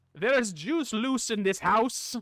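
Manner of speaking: failed attempt at Scottish accent. Speaker admits he can't do Scottish, then tries anyway: failed Scottish accent attempt. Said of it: "The Scottish one eludes me".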